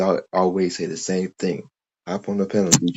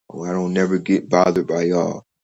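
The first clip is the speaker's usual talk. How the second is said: ordinary talk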